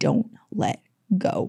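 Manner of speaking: soft, breathy, barely voiced whisper. Telling a story, the speaker repeats what their dad whispered, retelling dad's whisper. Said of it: "he just whispers to me".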